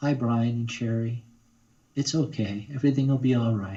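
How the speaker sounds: gentle, lighter voice. Showing the voice used for female characters, soft, light voice. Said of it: "just a lighter voice, sort of soft like this".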